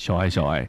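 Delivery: low, deep voice. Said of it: "他喜欢听低沉的声音".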